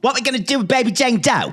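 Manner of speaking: put-on, loud, very high Philly accent via Brooklyn. Imitating a character from a TV show: Philly accent by way of Brooklyn. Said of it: "this kind of Philly accent that's also by way of Brooklyn".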